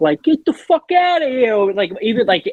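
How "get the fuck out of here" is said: thick New York Italian accent, very high-pitched. Explaining how anything sounds funny said in that accent, thick new york italian accent. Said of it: "if you say anything with that thick".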